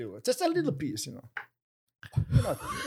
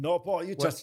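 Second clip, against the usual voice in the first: ordinary delivery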